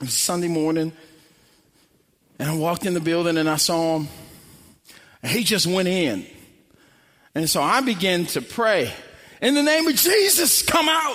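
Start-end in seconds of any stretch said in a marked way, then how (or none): 9.4-11.2 forceful acted-out yelling and screaming. Retelling praying over a man with a demon spirit: retelling own yelling and screaming. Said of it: "And I'm yelling, and I'm screaming".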